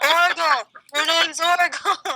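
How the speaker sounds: shouting. Playing a spectator in the crowd, yelling a name: yelling from the crowd. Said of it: "I'll yell from the crowd".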